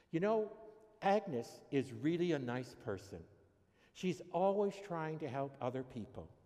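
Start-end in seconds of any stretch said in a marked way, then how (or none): none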